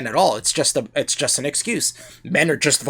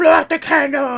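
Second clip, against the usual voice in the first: acted very high, loud, shrill, unhinged crazed yell; 13 semitones higher, 6 dB louder than usual. Recounting a story where a man yells at a woman, retelling a man yelling. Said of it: "and he's like yelling at her".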